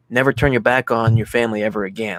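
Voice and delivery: normal talking voice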